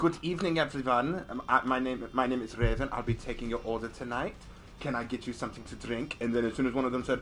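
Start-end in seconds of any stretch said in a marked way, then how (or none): 0.0-6.2 put-on German accent. Retelling greeting a group as their server, doing a put-on German accent. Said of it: "I did my German accent".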